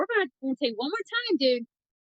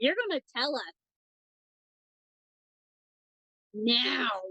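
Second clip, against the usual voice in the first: menacing, insistent, angry, demanding voice. A player's character confronting a panicking man at a door, in an angry voice. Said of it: "In my angry voice".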